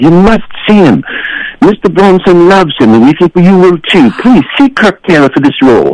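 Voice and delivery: very high-pitched put-on British accent. Calling about a film role while posing as his own agent, British accent. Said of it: "I did a British accent and basically said".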